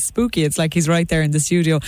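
ordinary talk

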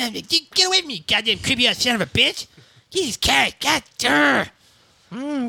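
put-on cartoon kid voice. Trading cartoon voices, rebuffing Herbert the Pervert, in an Eric Cartman voice. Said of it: "You could be trying to pick up Eric Cartman".

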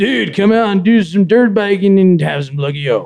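surfer dude voice. Improvising an ad line for a dirt biker, in surfer dude voice. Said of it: "this needs a surfer dude behind it".

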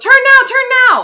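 high, loud, urgent yell.

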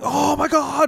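very high-pitched, impassioned exclamation. Imitating a commentator calling a wrestling match: imitating RJ's impassioned commentary. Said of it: "he's really impassioned".

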